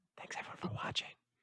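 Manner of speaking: hushed, barely voiced whisper. Thanking everyone for watching at the end: whispering. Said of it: "Why whisper?".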